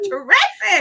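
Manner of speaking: play-acted sudden, frightened, startled shriek. Describing an older lady who gets scared every time, imitating a startled shriek. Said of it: "Every single time she's like".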